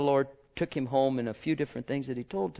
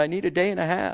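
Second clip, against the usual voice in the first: put-on teasing tone, louder; 5 semitones higher, 4 dB louder than usual. Retelling what they said to the man behind them, retelling a teasing reply. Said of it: "I teased him".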